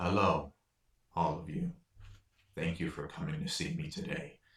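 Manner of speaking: deep, powerful, mighty yet gentle, tender voice. Game master voicing a stone statue greeting the group, deep, powerful but gentle voice. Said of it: "a deep and powerful but gentle voice emits".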